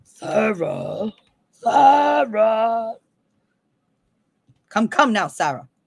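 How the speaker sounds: theatrical, very slow, each word drawn out, grand. Calling for Sarah in what the speaker calls their labyrinth voice: Goblin King voice. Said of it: "don't make me start with my labyrinth voice".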